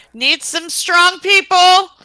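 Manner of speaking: high, slow, drawn-out holler. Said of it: "she'll holler down the hallway".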